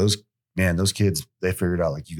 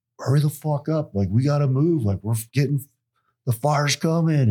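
urgent, pitched-up yelling; 8 semitones higher than usual. Retelling hurrying crew members during a fake fire drill: imitating own urgent yelling. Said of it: "really just trying to sell".

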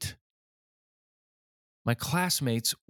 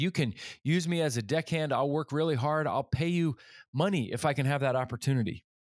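ordinary delivery

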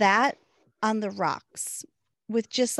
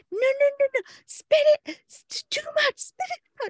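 put-on, very high-pitched, frantic, panicked voice. Retelling a moment when they were both panicking: imitating panicked pleading. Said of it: "we're both panicking".

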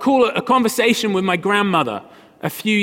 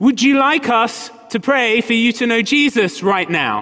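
voice slightly raised, a bit louder; 2 semitones higher than usual. Retelling how a sister repeated a question to a hard-of-hearing grandmother: slightly raised voice. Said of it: "raised her voice just a step".

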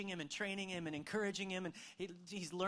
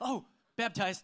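mock sudden dawning realization, said louder; 3 semitones higher, 8 dB louder than usual. Retelling how a boy stopped before yelling at his brother, imitating a sudden remembering. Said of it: "He like remembered".

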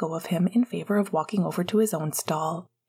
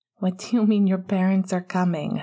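plain reading voice

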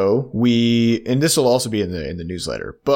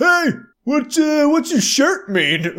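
very high, loud shouting. Retelling how a guy across the street called out: imitating someone yelling. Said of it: "and he just yelled".

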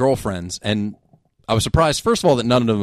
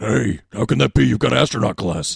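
rough, raspy, creaky character voice. Showing the others how Nathan Explosion sounds: Nathan Explosion voice. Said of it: "If you want me to do Nathan Explosion".

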